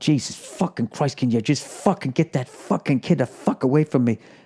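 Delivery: mock angry muttering. Retelling snapping at a screaming kid nearby: retelling muttering under breath. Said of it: "I was under my breath going".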